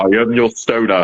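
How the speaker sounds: slow, drawn-out, intoning masked sci-fi villain voice. Joking that a gas-masked figure looks like Darth Vader: Darth Vader voice. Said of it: "He's just like Darth Vader".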